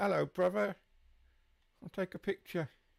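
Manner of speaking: put-on Essex accent. Commenting on a man taking selfies, voicing him in an Essex accent. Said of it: "That was my best Essex accent as well".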